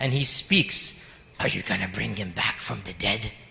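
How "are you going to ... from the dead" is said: very low, rough, raspy voice, mocking and joking. Recounting a man who laughed at them, quoting his question while imitating a raspy, joking voice. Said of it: "He spoke in this raspy, joking voice".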